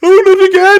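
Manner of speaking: very loud, very high wail of dismay. Voicing a character swarmed by rats: shouting in dismay. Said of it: "shouts Midnight Raven as he gets swarmed".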